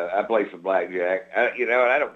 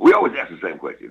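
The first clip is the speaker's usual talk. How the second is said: mock radio DJ voice, louder; 2 semitones lower, 6 dB louder than usual. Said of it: "Nobody talks like that".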